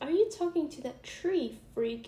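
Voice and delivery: mocking schoolgirl voice.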